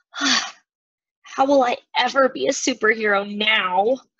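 mopey, slow, sulky, pouting tone. Back in her room after leaving her parents, a girl speaks to her friend, pouting. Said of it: "she pouted to her friend".

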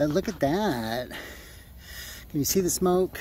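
breathless, puffing and panting through words. Speaker showing the smoke from a hand drill: breathing hard. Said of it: "I'm breathing hard".

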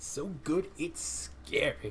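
slow, drawn-out, hushed whisper. Player reacting to a new victory pose, doing a Lucio impression. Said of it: "That's my Lucio impression".

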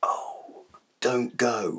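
soft whisper, quick in places. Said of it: "why am I whispering?".

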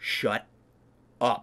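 very soft, quiet, hushed voice. Retelling a friend who picked up a fake gun at the table: very soft voice. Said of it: "he says very softly".

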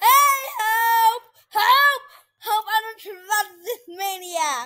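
yelling, shouting. During a game stream, the player calls out for help, yelling. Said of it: "and I'm still yelling?".

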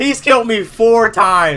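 frustrated high, loud, slow, drawn-out yell.

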